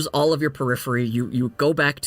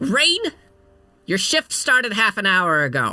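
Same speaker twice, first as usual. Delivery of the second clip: high, swooping gnome character voice; 6 semitones higher than usual. Voicing the gnome woman who owns the inn, scolding a late worker: voicing a gnome innkeeper. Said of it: "this gnome woman, and she looks up at you and goes".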